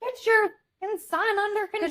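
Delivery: very high, shrill shout projected across a room. Recounting telling a man's mother to control her son, retelling a yell. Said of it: "And I'm like yelling it".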